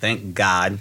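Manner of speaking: normal talking voice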